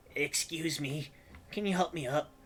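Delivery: tiny, small, high-pitched little creature voice. Voicing a small kobold in the scene; small kobold voice. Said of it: "you're a small voice".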